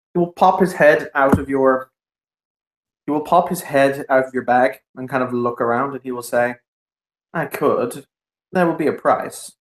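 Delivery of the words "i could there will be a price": drowsy, sleepy little dragon creature voice. Voicing what the sleepy little dragon says peeking from the bag, sleepy little dragon voice. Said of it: "He is a sleepy little dragon".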